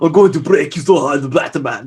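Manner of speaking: put-on Austrian accent. Acting out a villain threatening Batman: Arnold Schwarzenegger voice. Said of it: "It's got an Austrian accent".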